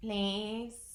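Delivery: put-on slurred voice. Retelling a lady's plea after a long silence: imitating a slurred voice. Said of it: "in a slurred voice".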